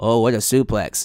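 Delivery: low, dead flat monotone. Imitating Kevin Patrick talking on the show: Kevin Patrick monotone. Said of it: "talking in his monotone".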